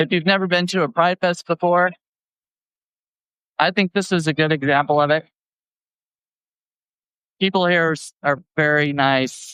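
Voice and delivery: choked-up, emotional voice catching. At a pride fest, the speaker talks about the people there, getting choked up. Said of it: "I'm getting a little choked up".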